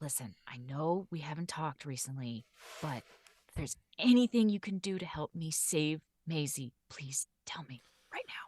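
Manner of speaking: hushed, low mutter under the breath. Playing Cal in a tabletop game, Cal muttering under her breath. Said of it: "just kind of mutter under her breath".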